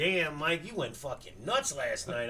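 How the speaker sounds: plain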